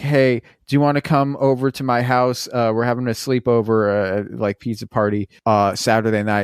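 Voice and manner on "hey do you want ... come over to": usual speaking voice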